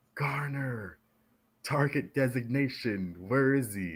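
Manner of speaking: very slow, drawn-out, high yelled voice. Retelling how the chiefs yelled at them in combat: imitating someone yelling. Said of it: "yelling at me".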